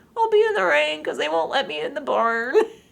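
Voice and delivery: put-on high, sing-song, cute tiny baby-animal voice. Retelling a movie shot, voicing the little baby left in the rain; cute little baby voice. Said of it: "including like the cutest little voice".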